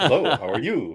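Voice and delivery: fast, quick mimicry of a blender's voice. Retelling how the blender greets his whiskey: fast imitation of the blender. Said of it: "He does it so fast".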